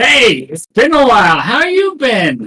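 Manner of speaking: put-on high, swooping elderly man's voice. Playing through a game, the speaker voices an old man character, old man voice. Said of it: "You hear an old guy guy's voice".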